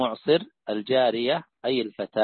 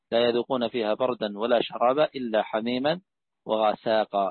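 ordinary talk, nothing marked

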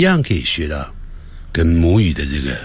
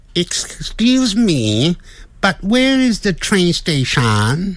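English with a touch of Filipino accent; 12 semitones higher than usual. Tuning an accent while practicing an English question, slightly Filipino-sounding accent. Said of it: "有点菲律宾腔".

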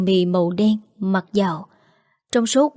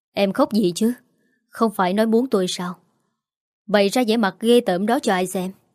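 ordinary delivery

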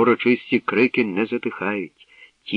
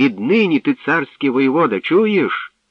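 loud calling-out voice; 4 semitones higher, 5 dB louder than usual. Mirosia calls out to Zaryslav before the crowd, called out loudly. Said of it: "гукнула Мирося".

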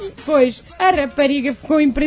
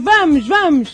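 ordinary talk, nothing marked

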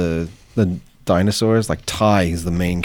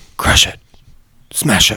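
really hushed, under-the-breath muttering; 4 dB louder than usual. Retelling how the little boy muttered under his breath: imitating a hushed voice. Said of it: "really hushed voice".

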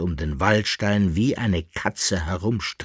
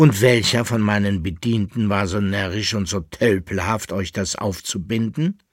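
ordinary delivery, nothing marked

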